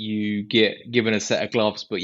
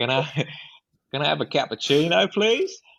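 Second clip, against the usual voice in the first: over-the-top put-on Australian accent, higher pitch; 6 semitones higher than usual. Retelling ordering a coffee, in the most ridiculous australian accent. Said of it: "putting on the most ridiculous Australian accents".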